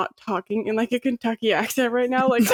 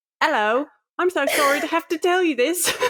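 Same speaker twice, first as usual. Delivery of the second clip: put-on British accent, pitched up; 5 semitones higher than usual. Speaker imagining using an accent for serious conversations: British accent. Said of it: "adopt a British accent every time I have a serious conversation".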